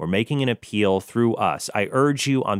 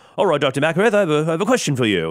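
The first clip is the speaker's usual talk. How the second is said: terrible fake British accent, pitched up; 6 semitones higher, 3 dB louder than usual. Acting out a supervisor's question to Dr. McAreth, in a bad British accent. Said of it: "that's a terrible British accent".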